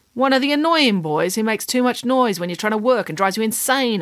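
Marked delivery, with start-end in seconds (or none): none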